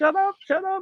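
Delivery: very high, frantic, acted-out panicked freak-out. Retelling a date whose contact lens slipped: imitating someone freaking out. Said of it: "And she's freaking out".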